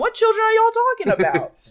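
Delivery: baffled, bewildered outburst.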